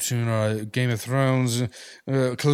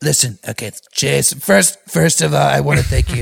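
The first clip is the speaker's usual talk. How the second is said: loud, rough, raspy put-on big-shot podium voice; 6 dB louder than usual. Asked to do Donald Trump, thanks the host: Donald Trump impression. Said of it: "give him some Donald".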